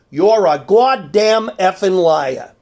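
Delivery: put-on Boston accent, done half-heartedly. Quoting a woman who phoned about a late delivery, in her Boston accent. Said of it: "with her inimitable Boston accent".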